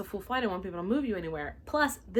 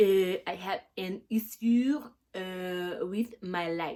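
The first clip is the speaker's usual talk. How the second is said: terrible fake French accent, irate and demanding; 3 dB louder than usual. Imitating a random angry Frenchman making his demands, terrible fake French accent, mock-angry. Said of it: "Please forgive my terrible accent ... a random angry Frenchman, and his demands".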